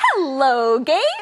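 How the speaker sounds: kind, welcoming, friendly voice. Showing an example of how to say hello to Gabe, in a friendly way. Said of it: "say hello in a friendly way".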